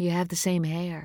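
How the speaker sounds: softly spoken. A mother sits back down beside her son to tell him about his twin; soft. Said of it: "Nora said softly".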